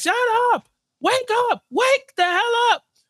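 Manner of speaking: mock, very high-pitched yelling. Imagining someone storming into a room at three women: acting out yelling. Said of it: "go in there and just start yelling".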